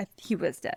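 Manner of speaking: plain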